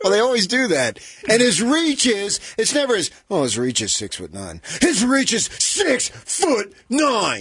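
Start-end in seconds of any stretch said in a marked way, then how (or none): 3.4-7.4 mock emphasis, voice rising, much slower. Mocking how others talk about a player's reach; imitating voice rising for emphasis. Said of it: "the voice goes up".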